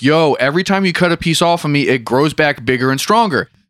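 ordinary delivery

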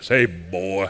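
big, very deep, very low preacher voice. Imitating a preacher and former Navy frogman: big deep voice. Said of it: "Had that big, deep voice like this".

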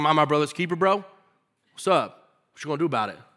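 mock arrogant, cocky, taunting sarcasm. Retelling a defiant answer to the Lord, imitating sarcastic Cain. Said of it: "He almost got sarcastic".

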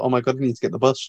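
normal talking voice

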